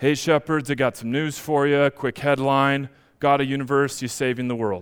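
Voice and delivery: low, flat, dull, deadpan monotone. A lone angel announcing news to shepherds, flat monotone. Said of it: "Just monotone".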